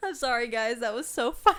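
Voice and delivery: loud speech broken by ugly laughter. Apologizing to the viewers after a funny answer, laughing while talking. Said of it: "I'm probably ugly laughing".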